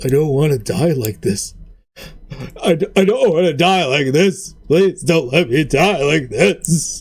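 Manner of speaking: tearful, weepy, blubbered delivery. Game master voicing a defeated enemy on his knees, blubbering plea. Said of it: "like just blubbering in front of you".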